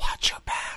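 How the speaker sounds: soft, menacing, threatening whisper. Playing a caller on a threats CD, phoning someone hated: whispered threat. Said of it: "when you can just whisper threat".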